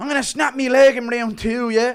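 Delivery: loud, very high-pitched fighter voice. Play a fighter trying to fix a fight, as a Conor McGregor impression. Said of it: "Impression of McGregor trying to fix a fight".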